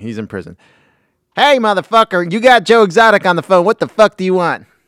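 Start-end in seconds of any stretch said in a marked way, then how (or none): 1.4-4.6 very high, shrill, very loud hollering. Acting out a prison phone call: Joe Exotic impression. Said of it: "So this is Joe Exotic".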